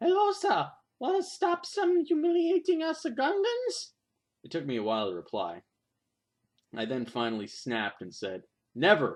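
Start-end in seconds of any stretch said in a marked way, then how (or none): 0.0-3.9 loud demonic voice, very high-pitched. Retelling how Jar Jar Binks spoke to him, in a demonic Jar Jar Binks voice. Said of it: "He said in a demonic voice".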